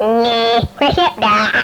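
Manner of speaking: cartoon rabbit voice with "fresh" stretched out. Ending a run of impressions, last but not least, in Bugs Bunny voice. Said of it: "Bugs Bunny".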